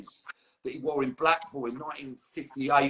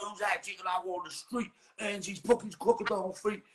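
put-on North London accent, higher pitch; 6 semitones higher than usual. Imitating a mate who is proper North London: imitating Paul Carova's North London voice. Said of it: "Talks like that".

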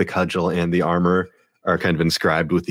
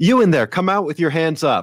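very high-pitched, shouted voice; 11 semitones higher than usual. In a role-play, a voice orders the players to come out with hands up; shouting. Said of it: "the same voice shouts out".

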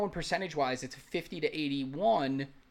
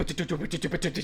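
fast scatted vocal guitar riff. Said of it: "and then be like".

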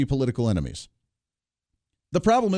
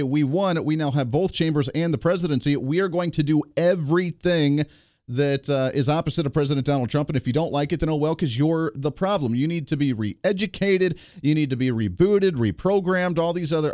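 ordinary delivery

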